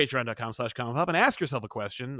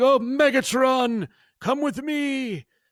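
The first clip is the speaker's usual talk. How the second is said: absurdly high, slow, ridiculous drawn-out voice; 11 semitones higher, 4 dB louder than usual. Describing how Shockwave talks by quoting him, ridiculous Shockwave voice. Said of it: "It's a ridiculous voice".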